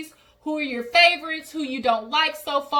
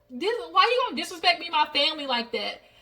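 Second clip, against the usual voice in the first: indignant, angry, pissed-off outburst; 2 semitones higher than usual. Retelling a scene where someone stands up angry: imitating Jen pissed off. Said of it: "Jen gets up pissed off".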